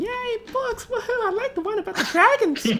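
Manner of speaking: put-on squealy, very high, loud little-kid cheering. Voicing little kids in a bookstore: little kids' voices. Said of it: "you hear the little kids going".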